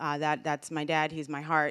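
ordinary talk

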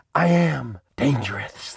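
dramatic after heavy breath. Showing a car inspired by a fighter jet, the host speaks; dramatic, after heavy breath. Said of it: "(dramatic inhale and exhale)".

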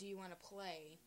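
normal talking voice

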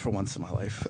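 sarcastic echo.

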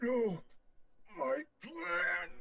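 mild cartoonish scream at half strength. Playing a character told to pick up five cards: screaming. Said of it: "He screamed too loud".

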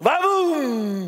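called-out incantation in a far-off voice.

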